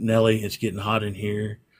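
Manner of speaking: usual speaking voice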